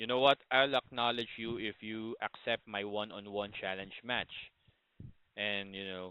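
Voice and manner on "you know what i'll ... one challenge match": ordinary talk, nothing marked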